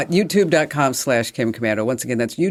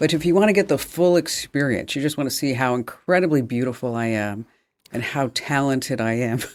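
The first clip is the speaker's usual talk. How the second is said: ordinary delivery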